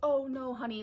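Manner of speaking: honeyed, doting, super sweet sugary tone. Retelling what the woman on the phone said: imitating a super sweet voice. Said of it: "super sweet".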